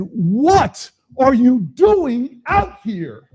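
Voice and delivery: put-on slow yelling. Recounting yelling at him over the loud wind and rain, retelling a raised-voice yell. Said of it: "I raised my voice and I said".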